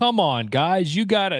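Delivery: very slow stilted read. Mocking a show's chill guy reading his lines: slow teleprompter reading. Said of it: "that's why he's reading it so slow".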